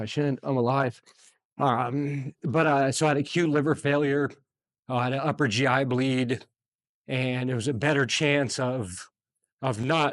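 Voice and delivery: tearful, choked-up, on the edge of crying. Telling listeners about ending up in the ICU, tearing up. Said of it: "I don't know why I'm tearing up".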